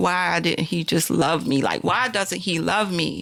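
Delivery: put-on tearful, crying voice. Retelling running to a cousin after a phone call, imitating own past crying. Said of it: "I just fell out crying".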